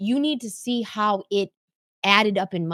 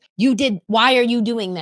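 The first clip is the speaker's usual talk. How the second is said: put-on condescending accusing tone, louder; 2 semitones higher, 6 dB louder than usual. Retelling own accusing question from an argument: imitating own condescending tone. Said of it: "pointing the finger, and it goes condescending".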